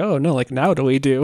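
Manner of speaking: ordinary delivery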